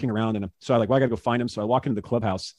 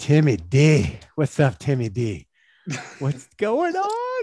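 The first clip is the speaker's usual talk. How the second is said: imitated voice, very drawn-out and swooping; 4 semitones higher than usual. Reading a text message aloud in the sender's voice: Suter's voice. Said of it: "It's always their voices".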